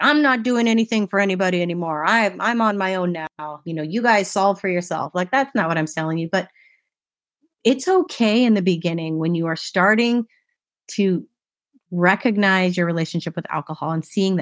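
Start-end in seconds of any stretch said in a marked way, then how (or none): 0.0-5.1 put-on mean, harsh tone. Acting out someone being mean when cutting others off: acting out a mean tone. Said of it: "be mean about it and be like".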